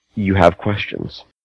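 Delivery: slick, shadowy, oily, hushed voice. Storyteller voices an unseen presence speaking inside the listener's head, oily voice. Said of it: "there's an oily kind of voice that enters your head and goes".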